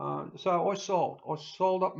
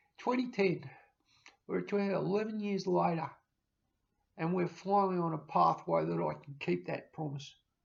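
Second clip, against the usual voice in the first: choked up, voice catching with emotion. Recalling handing over the keys to the home years ago: getting emotional. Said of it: "I'm getting emotional again".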